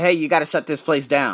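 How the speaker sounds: normal talking voice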